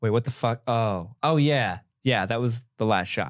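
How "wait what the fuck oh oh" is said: usual speaking voice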